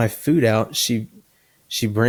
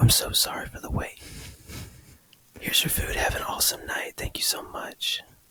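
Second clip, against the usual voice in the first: very soft, gentle ASMR whisper, barely audible; 9 dB quieter than usual. A culver's worker hands a customer ice cream, imitating a soft asmr voice. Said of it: "I've never had A S M R at a Culver's".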